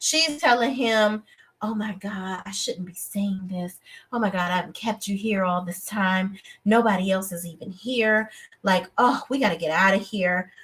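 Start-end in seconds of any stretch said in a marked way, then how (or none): 1.6-10.5 put-on, flirtatious voice. Retelling a decoy laying on compliments, in Carisha voice. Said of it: "in my Carisha, Carisha voice".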